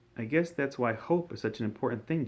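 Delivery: plain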